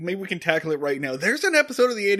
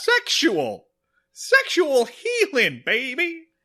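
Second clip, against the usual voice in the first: slow, drawn-out, badly done delivery; 8 semitones higher than usual. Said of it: "Our Barney Fife impressions are not getting better".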